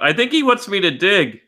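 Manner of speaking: high, loud yelling. Playing a character who yells out from a cell: yelling in character. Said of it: "I yell out".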